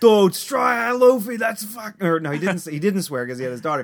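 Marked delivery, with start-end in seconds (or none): 0.0-1.4 put-on thick Boston accent, much higher, louder, slower. Retelling a man with his daughter on his shoulders greeting the speaker: wicked boston accent. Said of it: "it was a wicked Boston accent".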